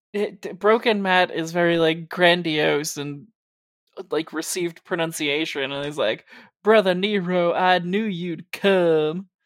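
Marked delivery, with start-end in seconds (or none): 6.6-9.2 put-on Southern good old boy voice. Quoting a wrestler's line: Matt Hardy good old boy voice. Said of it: "Matt Hardy, good old boy from North Carolina voice".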